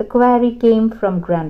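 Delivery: plain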